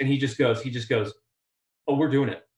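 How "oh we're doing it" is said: completely serious, dead-serious tone, no joking. Retelling a collaborator's reply about going to space: imitating Justin Lin, dead serious. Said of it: "just like dead serious".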